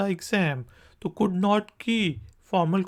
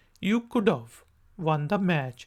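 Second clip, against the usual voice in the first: fast contracted speech; 2 semitones lower than usual. Showing the shortened spoken form in an english tutorial: fast contracted speech. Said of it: "इसी चीज़ को short करके".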